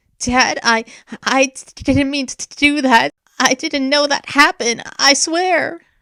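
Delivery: trembling, quavering, very high, slow voice. Narrator reads a child speaking to their father alone, in a quavering voice. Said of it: "Zin spoke in a quavering voice".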